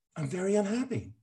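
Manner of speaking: very high-pitched film star, method-acting voice. Joking while a movie plot is told: Meryl Streep voice. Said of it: "I'm doing Meryl Streep".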